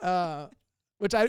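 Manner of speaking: ordinary delivery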